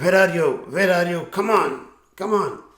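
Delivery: high, furious, angry shouting. Recounting an angry man searching a boat after a collision: retelling an angry shout. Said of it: "started shouting".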